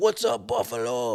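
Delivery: put-on Canadian accent. Retelling a concert drummer greeting the buffalo crowd, in a strong canadian accent. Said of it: "he's got a strong Canadian accent too".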